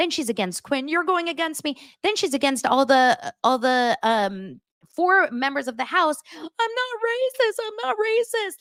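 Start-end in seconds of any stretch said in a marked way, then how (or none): 6.3-8.5 mock hysterical sobbing wail, very high-pitched. Act out a woman in the house denying that she is racist, imitating someone crying hysterically. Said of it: "Like crying hysterical".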